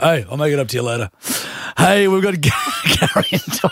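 sing-song, chill, laid-back surfer dude voice. Playing a judge in a mock courtroom, slipping into a surfy cool dude voice. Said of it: "Judge Darky's just become, like, a surfy, like, cool dude".

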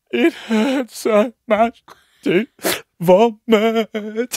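very high, slow, drawn-out bawling sobs. Retelling a friend's words while she was bawling: imitating someone crying. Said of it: "just fully crying".

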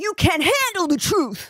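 big, high outburst. Told to give the line more gusto, try it again, sounding a bit like Eddie Murphy. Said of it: "I sort of came a bit Eddie Murphy".

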